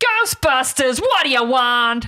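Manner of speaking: put-on New York accent. Quoting the Ghostbusters receptionist's line, in a bad Janice New York accent. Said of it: "That was a really bad accent".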